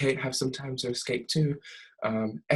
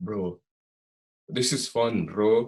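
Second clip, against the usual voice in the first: bad, terrible put-on Russian accent; 3 semitones lower than usual. Recapping a tv episode, quoting the tracksuit mafia in a terrible fake russian accent. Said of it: "Sorry for the terrible Russian accent".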